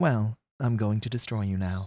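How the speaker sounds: low, soft, cold, level robotic monotone. Discussing a show's villain, the speaker imitates Astronema's cold robotic voice. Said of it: "she speaks like a robot".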